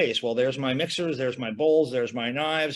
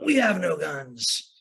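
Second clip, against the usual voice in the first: strangled, constricted, choked, high, slow voice; 3 semitones higher than usual. Held down during a police search, the narrator answers the cops: choked, high voice. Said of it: "I'd hear my voice choked and high".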